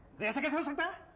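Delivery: high-pitched, panicked, protesting voice.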